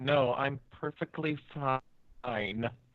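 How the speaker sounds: said tightly through gritted, clenched teeth. Character repeating an earlier answer when told to try again; through gritted teeth. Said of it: "Which was just through gritted teeth".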